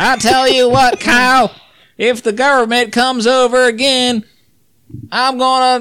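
very high-pitched, dead flat, deadpan drone. Joking with others on a couch: Dale Gribble voice. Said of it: "talking like Dale Gribble".

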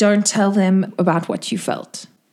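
hushed, secretive stage whisper. A game master voices a woman speaking in a player's mind, half-whispering. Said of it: "she also whispers to you".

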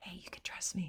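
hushed, breathy, very soft whisper. Voicing god's invitation to trust him: whispering. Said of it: "It's like he's whispering".

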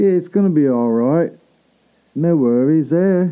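put-on English accent. Retelling consoling himself while talking to himself, British accent. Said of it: "like British accent".

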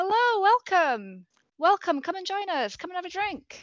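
very loud, high-pitched shout, as if calling across a distance. Voicing a man at a campfire who calls over travelers: shouting a welcome. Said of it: "they kind of shout over to you and wave".

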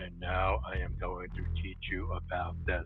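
put-on monotone teaching voice. Recall the scene in front of the class in Ferris Bueller, in a highly monotone Ben Stein voice. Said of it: "in this highly monotone attitude goes".

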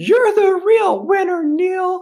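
shrill, loud, very high, drawn-out yell. Retelling a crowd cheering after a first-place win, imitating a high-pitched loud voice. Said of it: "high-pitched loud voice".

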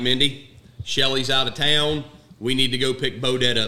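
normal talking voice

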